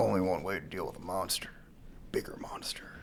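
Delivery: hushed whisper, almost no voice. Retelling a movie scene's plan, doing a voice: Gordon voice. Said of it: "I'm just doing a voice".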